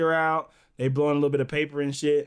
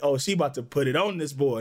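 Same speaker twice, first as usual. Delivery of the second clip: usual speaking voice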